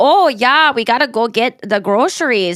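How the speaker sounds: put-on easy, conversational tone in a Minnesota accent. Imitating how someone in a show talks, in a Minnesota accent. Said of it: "she talks like, you know,... I guess it's the Minnesota accent".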